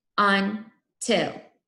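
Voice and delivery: robotic syllable-by-syllable voice. Leading a class in robot talk to hear the syllables, robot talk. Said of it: "Do until with me".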